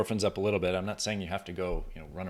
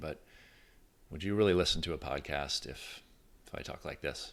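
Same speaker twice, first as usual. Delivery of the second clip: toned-down, quiet, softer, subdued delivery; 3 semitones lower, 4 dB quieter than usual. Showing how a podcast would sound delivered more quietly: quieter voice. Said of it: "if I'm a little quieter".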